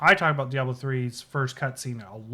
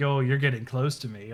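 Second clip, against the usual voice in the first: put-on seductive voice. Quoting a game villain's taunt during a fight: seductive Maiden of Lust voice. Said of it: "'cause she says it all seductive".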